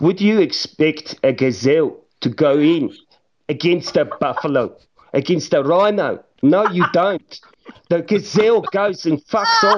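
Afrikaans-accented speech. Podcast host talking about a skillful player, in an Afrikaans accent. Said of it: "You're doing the rest of the pod in a Afrikaans accent".

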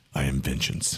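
voice dropped way down. Telling everyone to close their eyes, then speaking in a Batman voice. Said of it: "you have the best Batman voice".

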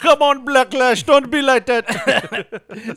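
put-on Jamaican accent. Joking about a misread word: pretending to be Jamaican. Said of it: "you're pretending to be Jamaican".

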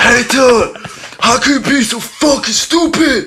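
put-on angry shout. Recounting how he snapped after coffee spilled during a drive, imitating an angry yell. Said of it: "he raised his big savage voice to me".

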